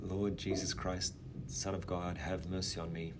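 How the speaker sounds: normal talking voice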